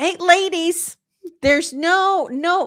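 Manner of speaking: high-pitched voice, each word drawn out. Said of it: "I'm doing a little [name] there".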